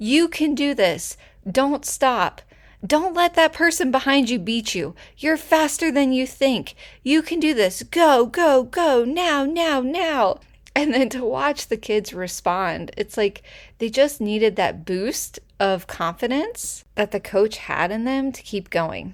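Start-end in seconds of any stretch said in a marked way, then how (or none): 0.0-10.4 loud, high-pitched, energetic shout. Retelling how the coach ran beside the kids on the track, in a really loud voice. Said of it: "saying in this really loud voice".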